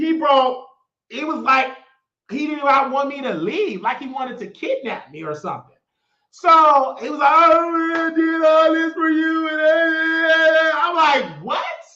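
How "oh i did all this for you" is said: put-on crying, higher. Speaker retelling what a man said to her, imitating him crying. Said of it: "why are you crying?".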